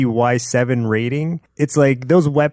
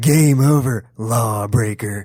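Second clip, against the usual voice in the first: low enunciated voice, much slower; 2 semitones lower than usual. Retelling a character's line the way he says it, in a low enunciated voice. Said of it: "it's just a low tone".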